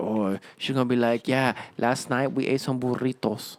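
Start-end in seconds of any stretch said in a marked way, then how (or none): 1.3-3.6 sexy, sultry put-on Spanish accent.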